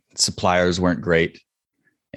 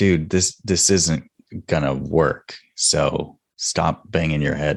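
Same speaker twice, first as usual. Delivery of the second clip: ordinary talk, nothing marked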